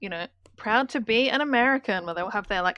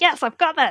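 thrilled, confident, excited, high and loud; 6 semitones higher, 6 dB louder than usual. Retelling a contestant finishing the states list: imitating excited Amber. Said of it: "and she's so excited".

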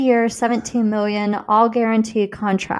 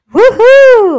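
shrill, very high, very loud whoop, no crack; 12 semitones higher, 11 dB louder than usual. Retrying a cheer for a team: cheer retried without cracking. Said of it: "let me try this again".

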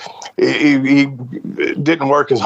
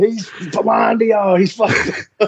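mock yell, high-pitched and heated; 9 semitones higher than usual. Retelling yelling at a man giving a speech about drugs to kids. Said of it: "And I'm over there yelling".

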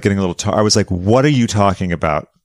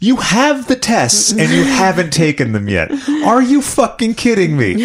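very high, swooping, incredulous, disbelieving yelling; 12 semitones higher than usual. Speaker re-enacts what they said to the listener over the phone, retelling own yelling. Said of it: "I'm sorry for yelling".

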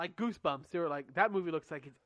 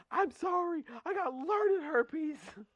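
put-on shrill scream, very high, slow and drawn-out; 12 semitones higher than usual. Telling how a little brother screamed at his teachers in class, retelling a scream. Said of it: "And screaming".

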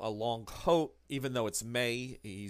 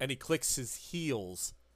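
ordinary delivery

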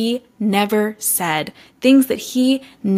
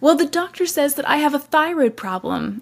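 high, derisive, mocking put-on voice; 6 semitones higher than usual. Retelling how a woman urged faith, then mocked someone's excuse: mocking imitation of someone. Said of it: "Then she mocks".

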